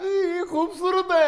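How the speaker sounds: slow, high-pitched, mock tearful sobbing.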